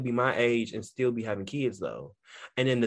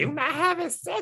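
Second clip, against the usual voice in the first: small, piping voice, way up high. Retelling a question she asked the speaker, in India's high little voice. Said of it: "She got that high little voice like".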